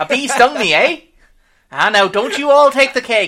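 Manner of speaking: put-on Fargo-sounding accent. Describing a polite serviceman stung by a bee, quoting him in a Fargo-sounding accent. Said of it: "he sounds like he's from Fargo".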